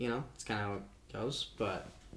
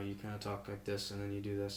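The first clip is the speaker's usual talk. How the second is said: mock robotic monotone voice, getting quieter; 3 semitones lower, 6 dB quieter than usual. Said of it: "talk about monotone".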